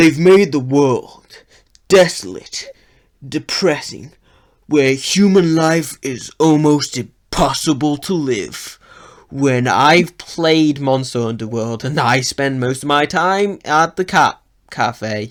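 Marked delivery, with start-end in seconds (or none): 0.0-8.8 edgy movie trailer voiceover voice. Describing a game's world as if in a trailer, edgy movie trailer voice. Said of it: "the edgy trailer voice".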